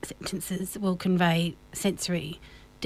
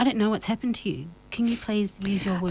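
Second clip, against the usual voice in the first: ordinary talk, nothing marked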